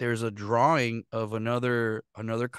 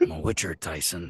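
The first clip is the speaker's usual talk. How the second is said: deep, cool put-on video-game hero voice; 6 semitones lower than usual. Showing off a voice from voice acting classes: cool put-on voice. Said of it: "I sound so cool when I say it like that".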